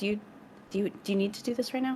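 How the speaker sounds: whispering voice. Asking Ginny a question in character so he won't hear: whisper. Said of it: "a whisper so he doesn't hear it".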